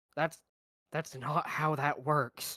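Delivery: confiding, intimate stage whisper. Whispering back to another character in a game scene: whispering in character. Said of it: "I'm gonna whisper back".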